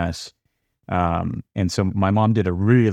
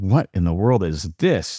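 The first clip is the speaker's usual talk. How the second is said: put-on appalled, shocked, disbelieving voice. Retelling a father's reaction to an assigned book: imitating a shocked father. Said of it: "And he was in shock".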